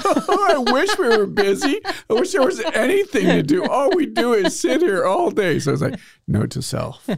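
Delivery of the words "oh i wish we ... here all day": very high, sobbing, bawling wail. Retelling how one of the ladies reacted to his small talk, imitating her bawling. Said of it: "starts bawling".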